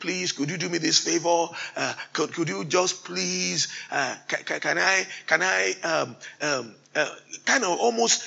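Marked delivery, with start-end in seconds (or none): 0.0-7.1 put-on stuttering, begging, pleading voice. Retelling how she asked her dad for a favor, imitating a stuttering, begging plea. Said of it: "she kind of came almost stuttering, begging".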